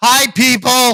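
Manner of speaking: very loud, very high-pitched shout. Speaker tells the listener to hold on, then yells a greeting at people: yelling. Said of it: "I am yelling".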